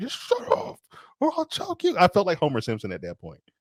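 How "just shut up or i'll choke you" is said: put-on yell, pitched higher. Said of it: "I actually yelled at the T V".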